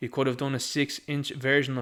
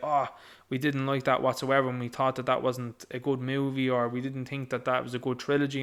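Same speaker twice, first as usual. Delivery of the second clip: usual speaking voice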